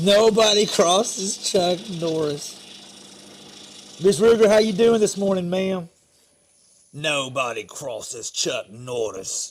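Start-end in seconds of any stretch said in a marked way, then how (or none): 6.9-9.5 very low, hushed Birmingham gangster drawl. Speaker repeats a line in a show's style; Peaky Blinders voice. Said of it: "In the best Peaky Blinders voice".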